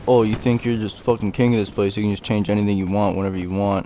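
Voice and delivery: ordinary talk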